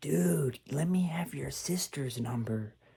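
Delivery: put-on squeaky voice. Retelling what a friend says every time they call: imitating David's squeaky voice. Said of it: "a weird looking guy with a squeaky voice".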